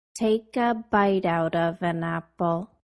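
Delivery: slowed-down delivery. Demonstrating the sentence again for listeners, said slower this time. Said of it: "I'll say it slower this time".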